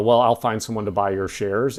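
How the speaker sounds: ordinary talk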